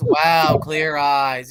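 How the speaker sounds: TV commercial pitchman announcer delivery. Mocking the other speaker by quoting the Clear Eyes commercial guy. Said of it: "you also sound like that guy that says".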